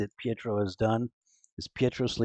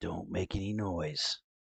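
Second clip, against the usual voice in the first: hushed, slow, soft half-whisper; 4 semitones lower, 7 dB quieter than usual. Voicing an intruder holding a blade to a sleeper: half-whisper. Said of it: "and you hear a whisper".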